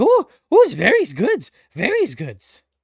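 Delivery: very loud, shrill, very high, swooping sing-song character voice. Voicing Sir Trash Night chewing a frozen patty: Sir Trash Night voice. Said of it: "He's like".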